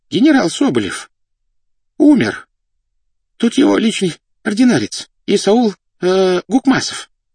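quavering, trembling, very high-pitched voice. Narrator reads an official announcing news to those present, in a trembling voice. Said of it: "дрожащим голосом объявил чиновник".

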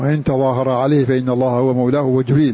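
ordinary talk, nothing marked

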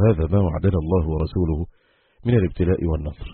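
ordinary talk

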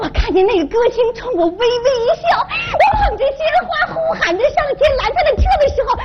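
rising, quickening cry.

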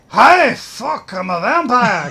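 drawn-out, loud, slow put-on Scottish vampire accent. Acting out a vampire caretaker waking up: Scottish accent. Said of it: "'cause they're Scottish".

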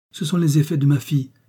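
shy, hesitant. Narrator reads a newly arrived mother answering the housewife, timidly. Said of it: "répondit timidement la nouvelle venue".

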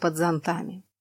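ordinary delivery

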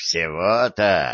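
low, scoffing, derisive, mocking tone. A man answers a threatening stranger with a mocking question. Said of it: "насмешливо спросил Дон".

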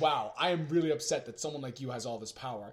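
ordinary delivery

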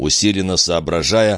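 plain reading voice

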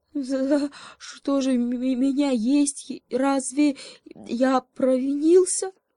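high, quavering, trembling voice, frightened and hurt. The hare, ears pressed back, answers the lion: trembling with fear and hurt. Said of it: "голос его задрожал от страха и обиды".

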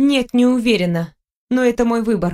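plain reading voice

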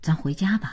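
ordinary delivery

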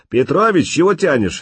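high, authoritative, self-assured commanding voice. A voice calls to Petrovich, asking why he is delaying; commanding, confident voice. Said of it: "раздался властный уверенный голос".

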